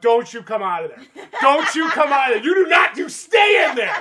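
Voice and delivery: very loud, high shout climbing in pitch. Speaker recounts walking into the room and shouting at the actors; retelling a shout. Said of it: "I'm just shouting at them".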